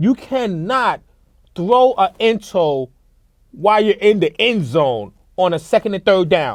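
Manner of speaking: getting mad, loud, deliberate, stressing every word. Ranting about a quarterback's bad game and interceptions, getting mad. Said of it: "I'm getting mad".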